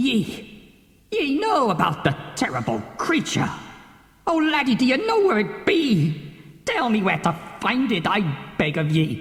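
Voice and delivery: put-on tormented, desperate, begging old sea-captain voice. A tormented captain questions a boy he calls laddie, desperate sea captain pleading. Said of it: "The captain clutches his skull. / The captain clutches his skull. / Nay. Nay. It cannot be possible. / The captain rushes to his chest. / Ah! How much longer can I be tormented like this? I be in desp".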